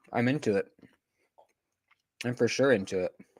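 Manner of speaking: talking while chewing. Reacting to what he just heard; talking while chewing. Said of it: "I'm chewing a Pop Tart here".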